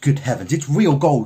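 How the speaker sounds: loud, gasping, gasped out. In a story, a woman testing rings with her teeth, gasping. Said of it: "she gasped".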